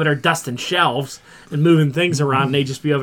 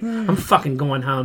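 put-on, wound-up, fed-up angry outburst. Retelling what was said when friends got them worked up: imitating own worked-up outburst. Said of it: "they would get me so worked up".

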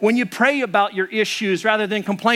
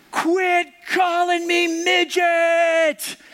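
very slow, high, stretched-out, drawn-out yell; 9 semitones higher than usual. Retelling a girl on a ski lift answering a teasing friend, retelling a yell. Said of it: "she yells out and she goes".

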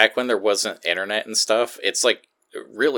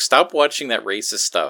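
usual speaking voice

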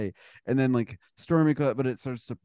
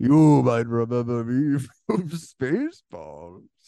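put-on huge, booming loudspeaker voice; 6 dB louder than usual. Describing a movie, the speaker repeats what a voice announces: big booming voice. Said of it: "It's just a big booming voice that says that".

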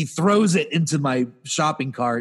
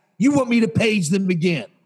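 mock in-your-face, confrontational, pitched high; 5 semitones higher than usual. Retelling a clerk getting in the speaker's face: imitating a confrontational clerk. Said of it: "And she says it like that".

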